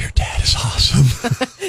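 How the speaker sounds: hushed, very slow stage whisper. Reading out a comment someone sent on Twitter: whispered. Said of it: "I don't know if I can whisper it".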